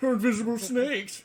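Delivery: put-on British accent. Voicing a character whose voice keeps changing: british accent. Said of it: "He's British now".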